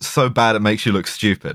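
ordinary talk, nothing marked

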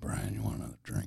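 low, gravelly, husky, sexy whisper. Asked to whisper a line on demand, in a sexy gravelly whisper. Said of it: "Can you whisper right now?".

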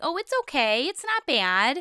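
acted-out patronising, drawn-out delivery. Retelling how the friends reacted to the home: imitating condescending people. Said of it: "very condescending".

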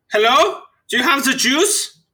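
very high-pitched, fake German accent. Joking about a war-era looking planet, put-on German accent. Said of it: "when you get that German accent".

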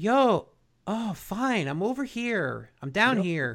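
slow, drawn-out grumpy drawl, grumbling and annoyed. Speaker retells how a guy answered her on the radio: Al Bundy impression. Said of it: "he like Al Bundy's".

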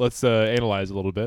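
ordinary delivery

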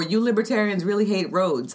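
plain

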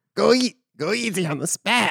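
mock gravelly voice.

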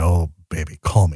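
creepy, suggestive murmur. Joking about how they'd ask women to call: creepy voice. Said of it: "I will just creepily talk like this and say".

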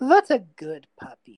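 very loud, drawn-out, mocking taunt. Voicing a character who grins after an attack fails: grinning, taunting. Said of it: "He just grins at you and just goes like".

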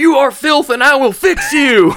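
mock very high, in-your-face yelling, screamed up close. Describing their relationship with the audience, the speaker does mock Full Metal Jacket drill sergeant yelling. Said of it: "I'm your drill sergeant".

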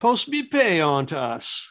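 put-on English accent. Quoting a famous line from a movie, faking an English accent. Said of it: "a way of faking an English accent".

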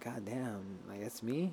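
hushed amazement.

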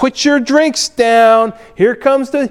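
put-on mocking voice. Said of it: "and it's in a mocking way".

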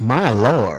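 put-on American Southern accent. Showing the other speaker how the line should be said, mock Southern accent. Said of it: "You got to do it in a southern accent".

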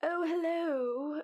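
put-on high-pitched little old lady character voice. Showing the group how a game character comes in, in an old lady voice. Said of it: "I did an old lady voice for her".

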